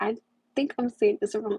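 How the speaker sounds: ordinary delivery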